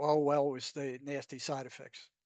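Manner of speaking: normal talking voice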